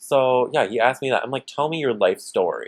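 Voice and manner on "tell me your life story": dripping sarcasm, laid on thick, heavy. Retelling own reply to a date's question: retelling a sarcastic line. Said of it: "super sarcastically like that".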